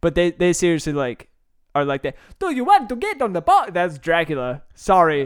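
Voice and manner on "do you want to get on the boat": over-the-top, exaggerated Italian accent, pitched up. Imitating people in Venice, speaking in an exaggerated Italian accent. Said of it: "you know the like over-exaggerated Italian accent?".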